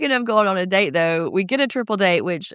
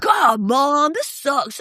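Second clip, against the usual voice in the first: put-on petulant angry teen voice, higher; 7 semitones higher than usual. Retelling a teenager in therapy complaining to his mom: imitating an angry teenager. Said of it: "a mom who was in therapy with her angry teenager".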